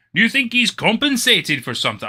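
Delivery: high, quick, rushed, poorly done ogre voice. Speaker announces a Shrek voice, then asks a question: bad Shrek voice. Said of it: "Shrek voice".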